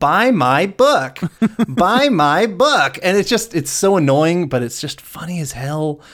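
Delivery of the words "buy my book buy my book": high, very slow, repetitive voice. Repeating a gag line, imitating a talking book stand. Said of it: "talking, uh, stand that goes".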